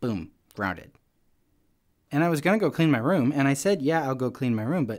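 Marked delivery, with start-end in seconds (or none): none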